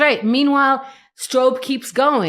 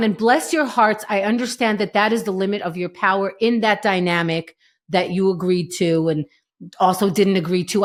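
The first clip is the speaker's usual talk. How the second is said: ordinary talk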